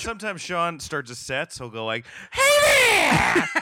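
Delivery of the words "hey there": put-on very high, very loud, belted old-showbiz style voice. Imitating how someone starts a comedy set, in a Mickey Rooney-style voice. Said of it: "Who was Mickey Rooney trapped in your throat?".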